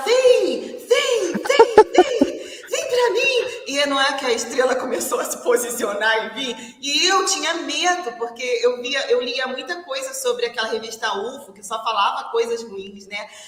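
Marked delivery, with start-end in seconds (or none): 0.0-3.5 very high, stretched-out, loud shout. Retelling a friend leaning out a car window at a light: imitating someone shouting. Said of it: "saiu pela janela do carro e começou a gritar".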